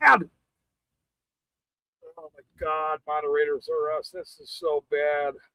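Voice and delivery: slow speech broken up by hard laughter. Reacting to a joke at the start of a stream, laughing hard while talking. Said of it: "You can't have me laughing this fucking hard".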